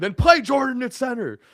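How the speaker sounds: very high, shrill, enraged, furious screaming. Retelling how a man answered over the phone about a draft pick, imitating someone screaming. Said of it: "Bob Knight screamed into the phone".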